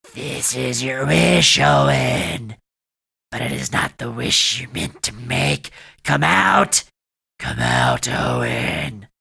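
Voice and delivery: loud, rough, creaky, swooping growling monster voice. Reading a story where the dying beast calls out to owen, growling monster voice. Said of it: "It growled again".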